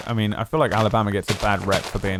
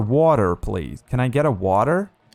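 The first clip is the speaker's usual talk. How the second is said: put-on American accent; 2 semitones higher than usual. Recalling asking for water in alabama, american accent. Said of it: "I had to speak with an American accent".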